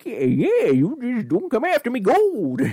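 put-on high, leprechaun-like old prospector voice. Busting out the friendly prospector character, the speaker says a line in Jasper voice like a leprechaun. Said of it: "I sound like the leprechaun now".

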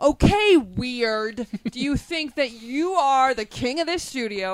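put-on, loud, high, over-the-top angry scolding. Retelling someone who pretends to be upset next door: imitating a fake upset scolding. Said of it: "puts on this big show".

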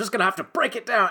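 put-on voice, high, fast and rattled.

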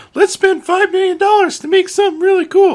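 very high, very loud cartoonish voice. Speaker voicing creatives pitching a big spend, slipping into a Mickey Mouse voice. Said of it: "I don't know why I did that voice like Mickey".

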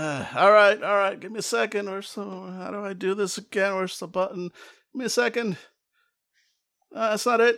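thin voice as over an intercom. Telling a delivery story, voicing the person on the intercom, tinny intercom voice. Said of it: "you hear a tinny voice going like".

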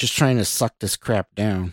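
ordinary delivery, nothing marked

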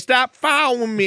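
mocking Southern drawl. Imitating a girl in a film who gets heated: random southern drawl. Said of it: "this random Southern draw that comes out".

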